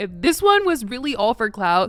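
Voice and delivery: ordinary delivery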